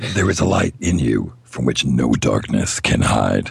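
very low, rough, epic movie trailer narration. Reading game text aloud to the group, speaker starts in movie trailer voice. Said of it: "I'll start it off with movie trailer voice".

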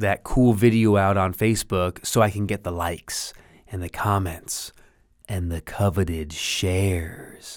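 creepy, eerie radio voice. Speaker talking about fear of not being enough, creepy radio voice. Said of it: "I know that was a creepy voice".

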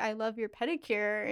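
ordinary talk

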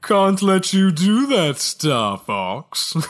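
put-on, poncy, snooty British accent laid on thick. Recapping a game's rival squadron, the speaker quotes them in a space-British Star Wolf voice. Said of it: "he's like space British".

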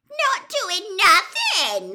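very high, loud, shrill cackle, swooping. Narrating a story, voice Peeves answering Professor McGonagall, a cackling Peeves voice. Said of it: "cackled Peeves".

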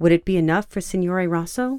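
ordinary delivery

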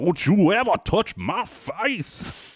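very high, very slow, thick Southern drawl. Recalling a line about the rooster: exaggerated Foghorn Leghorn Southern drawl. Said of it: "She went deep on that Southern accent there. Sounded like ... Foghorn Leghorn".

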